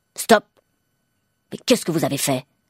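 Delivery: curt, sharp, fast, reproachful delivery. A man at the checkout speaks to the cashier; curt, sharp. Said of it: "dit-il sèchement".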